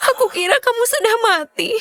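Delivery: in tears. Answering a loved one who asks why you are crying, crying. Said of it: "jangan menangis lagi".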